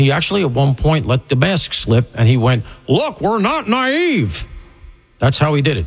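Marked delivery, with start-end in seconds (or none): 2.9-4.4 sulky, petulant barked reply, pitched very high, slow. Acting out how a man snapped at a crowd that wasn't buying it, imitating a petulant bark. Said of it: "That sort of petulantly".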